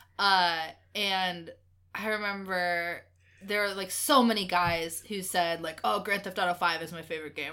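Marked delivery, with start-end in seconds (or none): 5.8-7.5 put-on generic bro dude voice. Recalling classmates naming their favorite game, in a put-on dude voice. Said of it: "you like how I put on my dude voice for that?".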